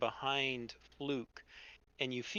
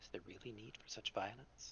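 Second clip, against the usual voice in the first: very quiet, low half-whisper, close up; 5 semitones lower, 15 dB quieter than usual. Retelling what a creepy guy at the bar half-whispers in your ear: half-whispering. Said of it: "he whispers uh, in your ear".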